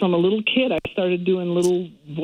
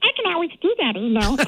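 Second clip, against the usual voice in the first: tiny, high, squeaky helium-like little voice; 10 semitones higher than usual. Offering to make the other speaker smile, in a squeaky little helium voice. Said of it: "Do not suck helium".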